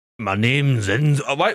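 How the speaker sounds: fake deep bass voice with Scottish accent. Trying out an impression of a Scottish man's voice, deep Scottish accent. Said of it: "when I try to do Scottish bass".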